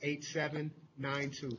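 said very slowly, at a deliberate pace. Repeating a phone number several times for listeners, said really slowly. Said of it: "Say it really slow".

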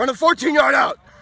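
shrill, booming, very loud, high-pitched coach yell. Asked to impersonate the head coach, calling a play in Randy Blankenship impression. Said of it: "Can you impersonate head coach Randy Blankenship?".

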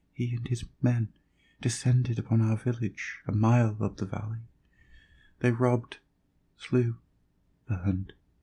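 voice growing weaker. A wounded girl in a man's arms tells him what happened, voice growing weaker. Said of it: "she gasped, her voice swiftly growing weaker".

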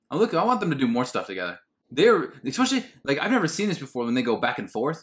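usual speaking voice

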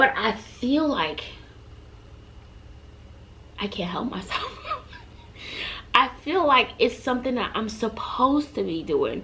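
heartfelt, emotional, breathy, almost whispered voice. Speaker explaining why they share their stories, getting emotional. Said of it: "I don't know why I'm getting emotional".

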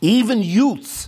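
loud, high-pitched put-on Italian accent. Reading a bible verse aloud, saying the word in an italian accent. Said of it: "I say it like an Italian".

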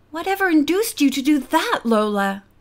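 ordinary delivery

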